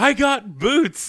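very high, thrilled, excited holler, acted out. Retelling someone calling to his brother across the way: imitating an excited shout. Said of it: "yelled his name and then went".

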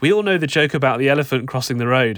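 plain

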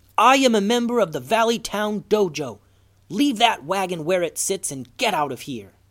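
severe, commanding yell. Reading a story, Goose yells at a man by a wagon, in his sternest voice. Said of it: "In the most stern voice he could muster, Goose yelled".

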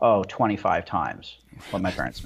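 put-on deadpan. Retelling how people answered a question about their pay, imitating a deadpan reply. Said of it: "they would just deadpan".

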